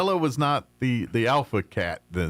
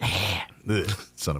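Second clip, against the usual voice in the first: mock hissing cat, lower and quieter; 5 semitones lower, 4 dB quieter than usual. Imitating the cat that hisses and cusses before walking away: imitating a cat hissing a curse. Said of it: "she'll hiss at".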